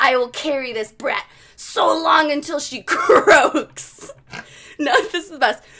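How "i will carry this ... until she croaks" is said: loud, demonic possessed woman voice. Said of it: "I'm gonna try to imitate it".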